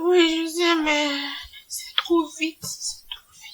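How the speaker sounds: speaking through tears. Character being told not to cry answers back, crying while talking. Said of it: "Ne pleure pas".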